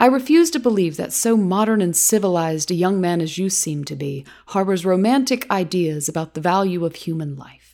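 ordinary delivery

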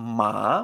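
ma dips low then climbs back up. Teaching tones in Spanish with the example ma: falling-rising tone on ma. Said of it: "Fíjate que ma baja y a sube hacia arriba".

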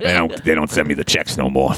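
rough, low, rugged, hard-lived voice. Answering as Spot after being asked a question: rugged Spot voice. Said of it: "you sound awfully rugged".

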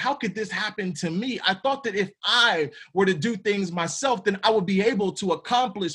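ordinary talk

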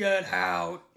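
put-on aggressive, throaty masculine voice. Voicing the masculine voice heard during a house blessing: aggressive masculine voice. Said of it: "Can you do a masculine one?".

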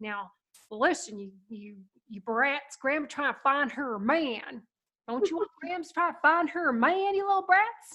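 put-on hillbilly accent. Grams tickles the hiding kids, teasing them in her pretend hillbilly voice. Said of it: "saying in her pretend hillbilly voice".

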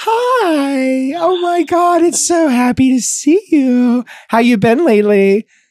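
very slow, high, fake-sweet, drawn-out voice. Mocking how a woman's voice changes face to face: imitating her fake way of talking. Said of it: "this fake smile and this fake way that she talks. Her voice completely changes".

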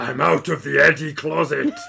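very loud, rough, roaring monster voice. Quoting a movie character to co-hosts, Venom impression. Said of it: "That was my best Venom".

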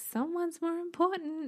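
very high, really childlike put-on voice. Telling what he says, quote him while imitating a really childish voice. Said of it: "in this really childish voice".

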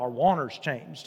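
a little southern drawl, low and soft. Speaker repeats what old country preachers might say, with a slight southern drawl. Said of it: "you got to say it with a little bit of a southern drawl".

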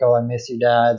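put-on crying. Retelling a movie scene where a character cries to her dad: imitating someone crying. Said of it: "crying, like".

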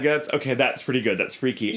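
plain

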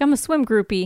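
normal talking voice

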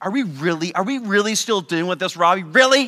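play-acted derisive, taunting, scornful mocking tone. Acting out an imagined rebuke after confessing again: imitating a mocking tone. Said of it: "he's gonna mock you".

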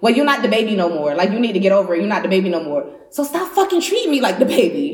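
put-on, very aggressive, hard scolding tone. Retelling what a sister said to the speaker: imitating someone speaking aggressively. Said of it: "she said it very aggressively".

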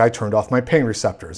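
ordinary talk

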